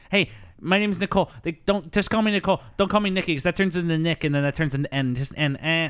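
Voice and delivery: put-on high, loud, belted New York accent. Discussing a character who looks like Allison, one speaker does Nikki's New York accent. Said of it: "Named Nikki with a New York accent".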